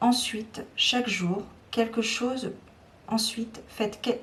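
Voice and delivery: fumbling, broken-off false starts and restarts. Speaker addressing listeners loses the sentence, stumbling over words. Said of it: "je bafouille".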